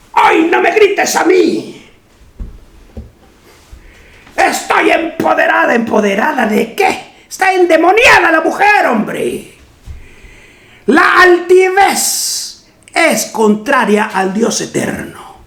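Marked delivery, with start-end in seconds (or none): 0.1-5.7 put-on crazy old woman voice, higher. Speaking on women's empowerment, the speaker acts out a woman answering back: imitating a crazy old woman. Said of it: "Y sale la vieja loca".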